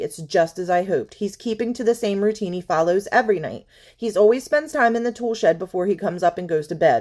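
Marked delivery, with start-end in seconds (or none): none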